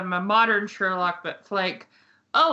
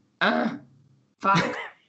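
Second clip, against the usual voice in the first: put-on gruff, muttered voice. Quoting an actor's typical line from The Witcher: Henry Cavill as the Witcher impression. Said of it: "He's really good at going".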